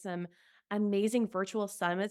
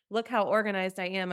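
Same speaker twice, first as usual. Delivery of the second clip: ordinary talk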